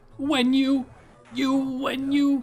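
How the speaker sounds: very high, loud, stuttering cartoon alien voice. Recreate the audio that people made memes of on TikTok, imitating Zim stuttering. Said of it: "he's like stuttering and he's like".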